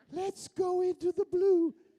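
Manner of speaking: put-on high, loud, toddler-like childlike voice. Telling how Valentino fared in sound films, the speaker imitates his childlike voice. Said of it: "you sound like a three-year-old child".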